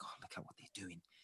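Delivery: muttering under breath. Retelling what a girl mutters on seeing people in masks; mumbling under her breath. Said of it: "she mumbles under her breath".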